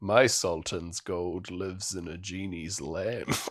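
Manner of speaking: mock-evil muttering under breath. Recounting what an evil man character says under his breath, mock-sinister mutter under breath. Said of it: "says under his breath as his like sinister evil man".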